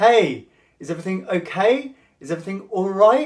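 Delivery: rising tune on okay and on right. Explaining approval-seeking tonality with an example, approval-seeking rise at the end. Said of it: "That's tonality that goes up at the end".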